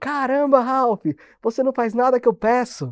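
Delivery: high-pitched yelling. Retelling how a former boss shouted at the speaker: imitating a boss yelling. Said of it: "Gritou assim pra mim".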